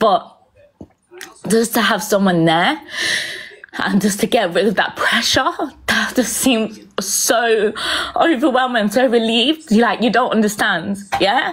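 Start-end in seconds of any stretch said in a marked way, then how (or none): 0.0-9.7 voice on the edge of tears, tearful. Recalling being reassured by someone at a hard time, close to tears. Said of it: "Sorry, it's going to make me cry".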